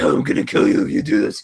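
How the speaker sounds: raspy, rough, creaky dark-hero growl, rushed. Talking about a film's Best Picture chances, doing the Batman voice. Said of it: "the Batman voice".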